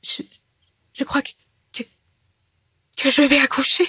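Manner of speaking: high, halting, stumbling stammer. A narrator reads a woman answering a priest who asks what's wrong, stammering. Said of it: "Elle balbutia".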